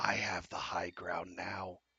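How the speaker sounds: very quiet, low, hushed whisper. A speaker pictures a character walking up to someone lying there: whisper. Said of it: "he just whispers".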